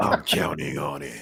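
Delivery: very low, rough growl. Quoting Batman's reply to Boss Maroni while talking about a Batman film, in a Batman voice. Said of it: "That's my Batman voice".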